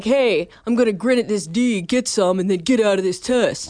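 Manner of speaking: put-on thuggish tough-guy man's voice. Speaker voicing a mindset they deny having had before a test: man's voice. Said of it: "Why are you doing a man's voice when you do that?".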